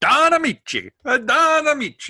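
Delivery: drawn-out, swooping Italian accent. Announcing the next name on the docket: stereotypical italian voice. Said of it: "That's a stereotypical Italian voice".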